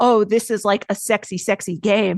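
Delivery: ordinary talk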